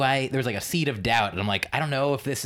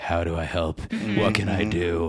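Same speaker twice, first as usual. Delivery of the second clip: put-on serious tone, lower; 6 semitones lower than usual. Reading out a written note, acting out asking how to help: imitating a serious voice. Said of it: "this is a serious voice".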